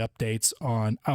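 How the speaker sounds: voice breaks and cracks mid-phrase. Speaker describing his channel to subscribers, voice cracking. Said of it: "my voice just cracked".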